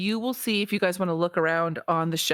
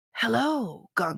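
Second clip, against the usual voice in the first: put-on high-pitched stage whisper; 5 semitones higher than usual. Playing Winston, who always talks in a whisper, greeting Gunk: Winston stage whisper. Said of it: "I'll try and do like the stage whisper".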